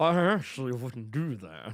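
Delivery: very low, sly, slick voice. Retelling how a man refused, show how he sounded in a slick, slightly Snagglepuss voice. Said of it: "a little bit of snagglepuss in his voice".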